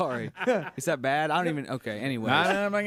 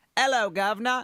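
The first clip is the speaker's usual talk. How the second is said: go-to attempted London accent, pitched up; 7 semitones higher than usual. Showing another speaker the go-to phrase for getting into a put-on London accent. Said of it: "my go-to when I'm trying to get into my London accent".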